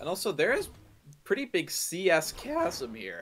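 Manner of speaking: voice cracking. Commentator calling a game, voice cracking. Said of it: "Sorry for the voice crack".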